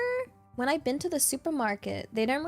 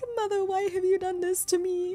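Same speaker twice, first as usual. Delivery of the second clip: put-on sad voice; 5 semitones higher than usual. Voicing an imagined drowning garlic bread speaking to its mother: mock sad voice. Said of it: "the world's saddest garlic bread, like, just drowning".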